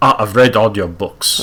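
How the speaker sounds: horrible, badly done put-on Russian accent. Sergey bumping into someone he is a big fan of, bad Russian accent. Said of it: "it's a horrible Russian accent".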